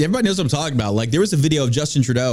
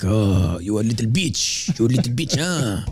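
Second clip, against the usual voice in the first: low, put-on French accent; 4 semitones lower than usual. Riffing on a weak politician, voicing the Chinese president's reaction: mock French accent. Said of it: "I don't know why I did the French thing".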